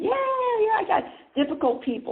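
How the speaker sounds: high, loud eager voice. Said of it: "ninety percent of the people raise their hand".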